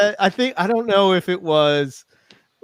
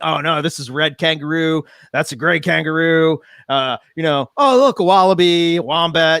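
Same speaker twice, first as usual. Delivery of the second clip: mock eager, excited, geeky know-it-all gushing. Retelling a friend's reaction to kangaroos in Australia: imitating Owen geeking out. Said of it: "he was really geeking out".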